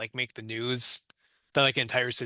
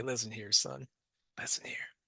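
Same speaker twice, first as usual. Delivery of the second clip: put-on gruff voice, much quieter; 8 dB quieter than usual. Playing his police chief character in an improvised bit, gruff Clint Eastwood police chief. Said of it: "my gruff police chief would say".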